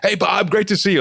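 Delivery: lively, energetic, very high-pitched voice. Teaching how to get someone's attention, greeting with energy. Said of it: "put some energy into it".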